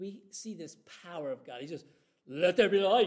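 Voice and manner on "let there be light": booming, big-voiced delivery. Retelling the creation story, saying God's first command: God's big boy voice. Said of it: "He used his big boy voice".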